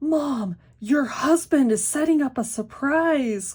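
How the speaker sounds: very loud, high, mock thrilled little-kid voice. A mother quotes her five-year-old son coming to tell her something, imitating an excited child. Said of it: "with this excited voice".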